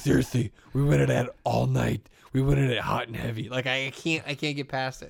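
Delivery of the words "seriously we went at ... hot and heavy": silly, goofy, gravelly superhero spoof voice. Quoting a Batman parody bit in Pete Holmes' silly Batman voice. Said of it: "Pete Holmes' silly voice".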